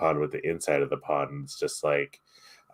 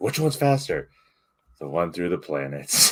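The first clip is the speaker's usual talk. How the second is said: unwilling, grudging, reluctant tone. Describing a scene where someone asks which way is fastest: imitating Melfina's reluctance.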